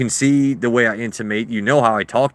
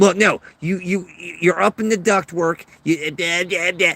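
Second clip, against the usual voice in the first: put-on goofy, high, weird cartoon-character voice; 7 semitones higher than usual. Speaker retelling what a man told them at their job, weird cartoony voice. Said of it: "this weird cartoony like your wife weighs five hundred pounds".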